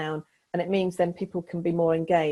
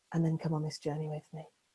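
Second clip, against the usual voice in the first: emotive voice, much quieter; 8 dB quieter than usual. Showing how to put emotion behind part of a talk, Joanna Lumley-style voice. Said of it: "put some emotion behind".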